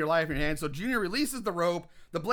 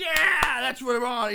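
put-on hyped, pitched-up, worked-up wrestling showman voice; 6 semitones higher than usual. Retelling a movie character enjoying the crowd: imitating worked-up showman. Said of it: "getting all worked up in the showmanship".

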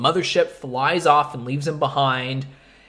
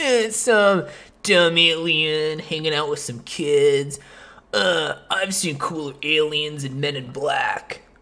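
put-on slow, awful twelve-year-old voice. Imitating his twelve-year-old self dismissing a movie: imitating his twelve-year-old self. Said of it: "I'm glad you don't have that voice anymore".

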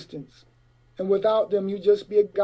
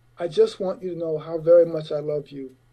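low-key, sincere, plain delivery; 3 semitones lower than usual. Retelling what was said while driving down Sunset Boulevard, retelling quiet words. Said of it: "and I say quietly".

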